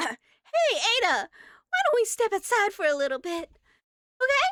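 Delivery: acted girl character voice. Reading a game character's lines aloud to Ada: Monika voice. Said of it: "I forgot what her voice sounds like".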